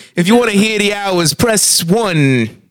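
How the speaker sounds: exaggerated dumb Italian accent. In a group bit about italian voices, speaking in a dumb italian accent. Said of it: "we're doing two styles of Italian here".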